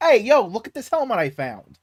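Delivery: put-on working-class Brooklyn accent. Describing a post-credit scene, doing a guy from brooklyn in a put-on brooklyn accent. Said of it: "this guy from fucking Brooklyn goes like".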